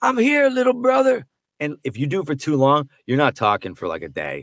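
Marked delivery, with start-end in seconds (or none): 0.0-1.3 very high, throat-straining, strained character voice. Showing the hardest voice to do: Michael Rooker as Yondu voice. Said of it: "putting so much strain on your voice".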